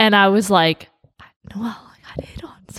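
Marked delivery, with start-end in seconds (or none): 1.5-2.8 whispered very softly, barely under the breath. Speaker retells coming home to report being hit on, whispering. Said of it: "I like that she whispers it".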